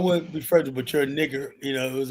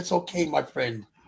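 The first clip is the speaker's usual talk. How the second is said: put-on British accent, quieter; 3 dB quieter than usual. Retelling a scene with a man sentenced to death, quoting him; stupid british accent. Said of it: "with that stupid British accent".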